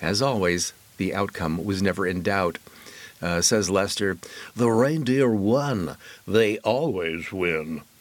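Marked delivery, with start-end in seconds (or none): 4.6-7.8 on-air radio disc jockey delivery. Reading out a festival story, quoting someone in a DJ voice. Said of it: "That's my DJ voice".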